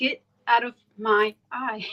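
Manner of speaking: normal talking voice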